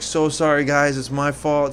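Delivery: loud, projected, yelled-out voice. Telling how the ride stopped, re-enacting the apology to the waiting line: retelling a yelled apology. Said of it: "I yelled".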